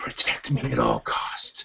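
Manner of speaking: slow, drawn-out, hushed whisper. Playing a character whispering to a fur ball from a bag: whispering to a fur ball. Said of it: "I whisper to the little fur ball".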